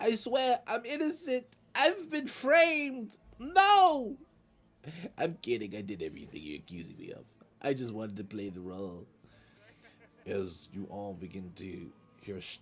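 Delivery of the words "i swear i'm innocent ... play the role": shrill, swooping goblin voice, very high and loud. Voicing a prisoner heard coming down the stairs: goblin prisoner voice. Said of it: "hear a voice echo from up the stairs".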